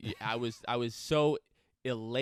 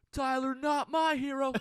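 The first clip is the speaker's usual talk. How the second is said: put-on shrill, very high, jeering screamed taunt; 5 dB louder than usual. Recalling a basketball game, retelling screaming a taunt at a player. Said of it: "Like I'm I'm screaming".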